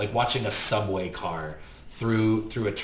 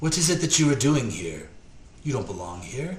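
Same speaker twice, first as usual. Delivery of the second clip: ancient elf voice with steady, firm strength underneath; 3 semitones higher than usual. Game master voicing an old elf the players hear in the room, soft old elven voice. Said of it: "an old um, elven, soft elven voice with some strength to it say".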